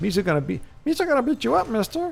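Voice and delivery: very high, squeaky, swooping sing-song voice. Joking about the prequels, doing a Jar Jar Binks voice. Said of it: "he doesn't talk like this, but he should".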